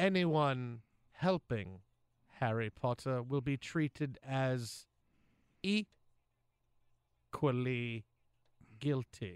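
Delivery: very low voice dragged out very slowly. Doing a best Professor Snape impression for the others to vote on: Alan Rickman as Snape voice. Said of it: "I'll give you my best".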